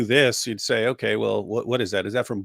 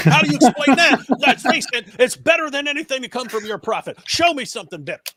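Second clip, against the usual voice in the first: put-on voice pushed high and loud; 5 dB louder than usual. Doing an impression after hearing about an Alex Jones talk: Alex Jones impression. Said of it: "That's actually a very good impression".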